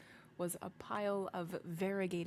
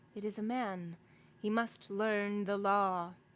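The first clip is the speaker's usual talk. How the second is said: loud, thick voice with whistling overtone; 2 semitones higher, 6 dB louder than usual. A hunched figure in the dark answers the narrator; thick voice, whistling overtone. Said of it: "a thick voice with something in it, a kind of whistling overtone".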